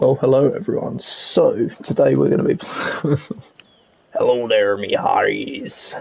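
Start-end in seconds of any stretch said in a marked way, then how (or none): 4.1-6.0 clumsy, badly done put-on pirate voice. Opening a guide on building a ship, greeting everyone in a bad pirate voice. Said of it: "What a shit voice I've got for a pirate".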